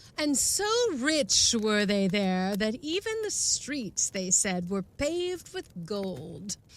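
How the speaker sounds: fancy, posh, put-on British accent. Reading a passage aloud as a fancy london person, in a highfalutin british accent. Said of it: "a kind of British, highfalutin, foo-foo accent".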